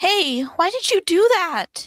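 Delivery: shouting angrily in character. Speaking in character, objecting to what another character just did: yelling in character. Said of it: "who are you yelling at".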